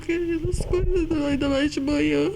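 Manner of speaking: voice breaking with tears, high and tearful.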